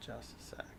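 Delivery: whispered aside, hushed and low.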